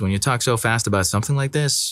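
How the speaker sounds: usual speaking voice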